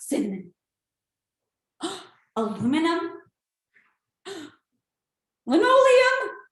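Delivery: slightly fearful, unsure reading, a little scared. In a voice exercise, repeating the same three words on request: a little fearful. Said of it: "maybe you're a little bit fearful".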